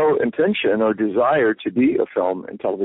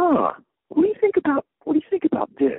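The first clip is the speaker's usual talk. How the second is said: small nebbish voice, much higher. Actor describing the inner voice that nudges him toward opportunities; little nebbish voice. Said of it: "this kind of little nebbish voice".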